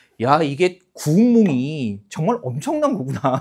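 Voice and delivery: normal talking voice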